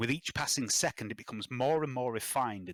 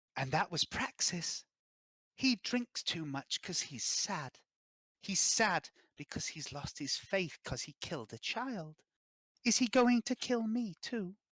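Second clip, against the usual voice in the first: put-on eerie ghostly little girl voice, high and slow; 7 semitones higher than usual. Voicing a young ghostly girl who remembers Gaius: young ghostly girl voice. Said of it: "and she says to you".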